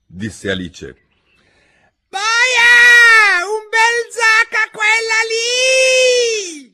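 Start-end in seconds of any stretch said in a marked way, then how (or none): 2.1-6.5 very high, very loud, slow, drawn-out screech. A narrator reads the queen's order during the trial, shrieking at the top of her lungs. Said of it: "strillò la regina con quanto fiato aveva in corpo".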